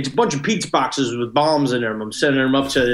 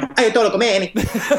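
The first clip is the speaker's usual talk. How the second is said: loose put-on Italian accent, pitched up; 8 semitones higher than usual. Showing the others how a name could be said, in sort of an Italian accent. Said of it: "you could also do it in sort of an Italian accent".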